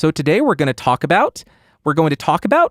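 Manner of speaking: question-like upward lift on each "about". Explaining how people end sentences while demonstrating it, upspeak. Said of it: "It's called upspeak".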